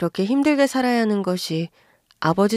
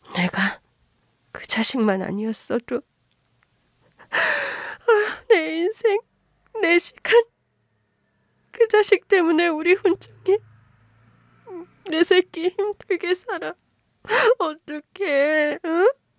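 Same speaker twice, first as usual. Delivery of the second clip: tearful, sobbing speech, higher pitched; 9 semitones higher than usual. Lamenting a hard life to her son, who tells her not to cry: crying while talking. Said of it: "울지 마".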